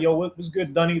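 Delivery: put-on recent New York accent. Showing how people from more recent New York talk: imitating a recent New York accent. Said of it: "the more recent New York where it's like".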